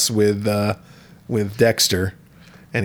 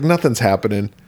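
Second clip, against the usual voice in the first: normal talking voice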